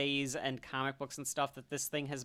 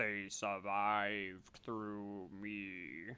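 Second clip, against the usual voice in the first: very deep voice, very slow, every word drawn out; 6 semitones lower, 7 dB quieter than usual. The Emperor of the Daleks answers how they survived the Time War, in a very deep Dalek voice. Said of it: "this very deep Dalek voice that says".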